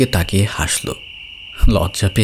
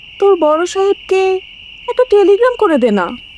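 trembling, quavering voice, much higher and louder; 4 dB louder than usual. A mother pleads with her son Anis, who must leave for work tomorrow; trembling voice. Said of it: "আনিসের মা কাঁপা গলায় বললেন".

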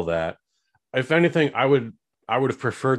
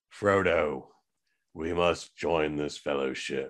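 bad, very low, dragged-out drawl; 7 semitones lower, 7 dB quieter than usual. Joking about an actor in a fantasy film: bad Nick Cage impression. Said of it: "that's a bad Nick Cage".

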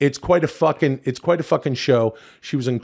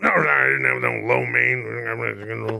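put-on very slow, creaky drunken grumble, stretched "mein"; 3 semitones lower, 3 dB quieter than usual. Mocking the other speaker's Hulk Hogan, like a drunk businessman. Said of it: "now he just sounds like a drunk businessman".

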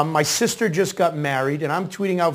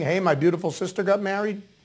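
ordinary delivery

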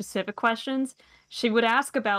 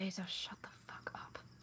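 very quiet whispered mutter under the breath; 20 dB quieter than usual. In a role-play scene, a character mutters at another character, muttering under her breath. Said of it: "mutters under her breath".

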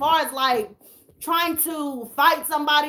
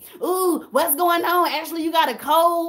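mock gossipy, nosy, prying busybody voice; 3 semitones higher than usual. Imitating subscribers reacting to watering eyes: imitating messy nosy subscribers. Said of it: "watch my subscribers start being messy".

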